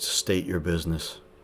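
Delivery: very flat, level, machine-like robotic monotone. Narrator voicing a machine addressing a listener, in a very monotone robotic voice. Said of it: "in a very monotone, robotic voice".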